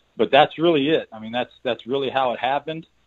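ordinary talk, nothing marked

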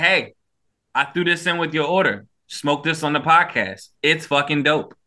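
ordinary talk, nothing marked

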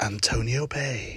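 hushed, very quiet female radio-announcer voice. Recalling an old John Carpenter film, doing The Fog radio presenter impression. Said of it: "the female radio presenter, she'd say".

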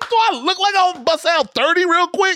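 high-pitched, loud, laughing mock refusal.

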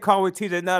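ordinary talk, nothing marked

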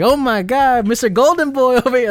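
put-on strong New York accent. Imitating the Penguin greeting Batman in the film: Penguin's New Yorker voice. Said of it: "very traditional, like, New Yorker".

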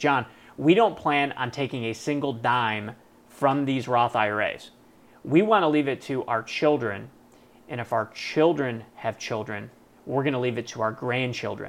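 ordinary talk

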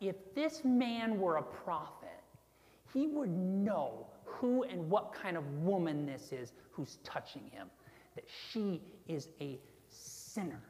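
put-on voice dripping with disgust and contempt. Reading aloud the Pharisee's private thought about the woman: disgusted tone. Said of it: "Can you hear the disgust in his voice?".

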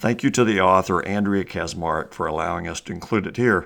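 ordinary delivery

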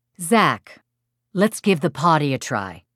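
ordinary delivery

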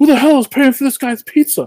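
very high, furious, blowing-up angry outburst. Telling a story about a pizza order, quoting a man who pounds the table: imitating an angry outburst. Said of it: "This guy blows a stack".

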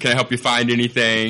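plain

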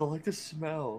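soft, subdued, low-key delivery. Quote a hilarious guy answering everybody who asks him why, kind of quietly. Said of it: "he just kind of quietly goes".

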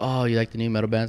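ordinary delivery

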